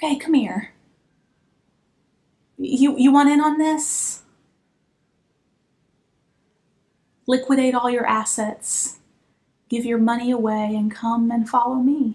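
confiding, conspiratorial, secretive insider tone. Retelling Jesus leaning in with an insider tip: imitating Jesus speaking real quiet. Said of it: "He gets real quiet and he says".

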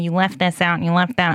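ordinary talk

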